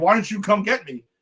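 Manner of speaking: mock, acted-out yelling. Recapping an episode, quoting a cast member calling to the team, retelling a yell. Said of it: "Rick's yelling at the team like".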